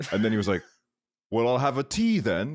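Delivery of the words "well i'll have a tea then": rough put-on British accent, pitched up. Speaker retells a customer answering the waiter, in a British accent. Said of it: "in like a kind of like a British accent".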